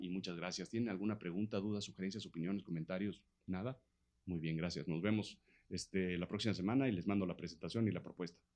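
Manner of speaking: low, quiet, dull, even monotone presenter voice.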